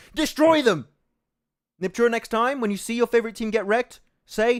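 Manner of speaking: loud, high, mock furious rant. Teasing another speaker about going easy in a cast: mock angry rant. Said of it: "that's my angry rant".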